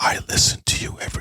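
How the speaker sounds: fast, soft whispering. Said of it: "Why are you whispering?".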